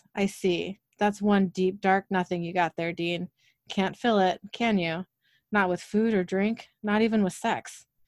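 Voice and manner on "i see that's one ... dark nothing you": ordinary delivery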